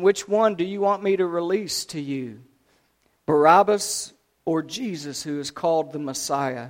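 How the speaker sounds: ordinary delivery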